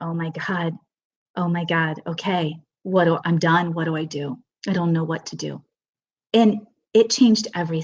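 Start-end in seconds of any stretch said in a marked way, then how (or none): 0.0-5.6 sad, defeated, resigned tone. Speaker recalls the moment they gave in, retelling a sad surrender.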